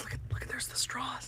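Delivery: very quiet, hushed whisper. Retelling what a friend whispered while pointing out a man's straws: whispering. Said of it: "he like whispers".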